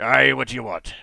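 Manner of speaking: very loud, distrustful, suspicious hobgoblin voice. As the hobgoblin in charge, turning to the stranger, speaking suspiciously. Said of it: "kind of suspiciously".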